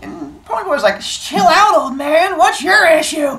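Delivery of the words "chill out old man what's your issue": put-on teenager voice, much higher. Retelling a story, the speaker voices Ponyboy answering Derry: Ponyboy going full teenager. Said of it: "goes full teenager on him".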